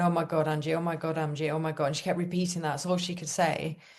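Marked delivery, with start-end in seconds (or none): none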